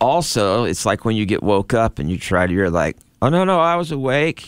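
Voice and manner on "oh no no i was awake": high, defensive, just-woken-up tone. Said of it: "you feel defensive".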